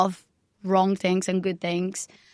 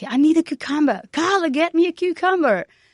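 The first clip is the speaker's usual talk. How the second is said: high, screaming chef voice, mock; 9 semitones higher than usual. Recalling a busy night when the chef yelled for a cucumber, imitating a screaming chef. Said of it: "the chef starts screaming like".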